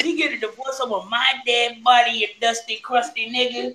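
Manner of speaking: put-on smoker-style voice. Imagining what the wife said about a divorce: imitating the wife's voice. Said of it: "That's how she sound, too".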